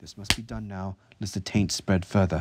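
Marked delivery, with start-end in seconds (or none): none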